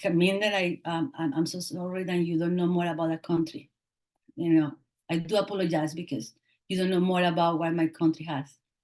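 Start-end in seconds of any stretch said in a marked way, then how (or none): none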